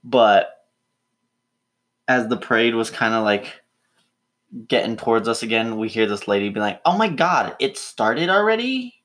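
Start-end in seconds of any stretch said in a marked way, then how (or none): 6.8-8.8 exaggerated Valley Girl voice, very high and swooping. Retelling what a woman at a parade said, in an exaggerated valley girl voice. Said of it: "making her sound more Valley Girl than".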